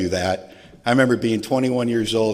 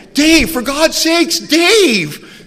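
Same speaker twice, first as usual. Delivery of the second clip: full-on shriek, very high and very loud; 8 dB louder than usual. Retelling a man finding Dave on his water bed; imitating someone screaming. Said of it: "And he starts screaming".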